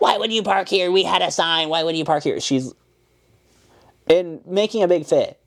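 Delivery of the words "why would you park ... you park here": irate, repeated, scolding angry yelling and screaming. Recounting a manager yelling about parking: retelling a manager screaming. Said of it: "She's out there screaming at people".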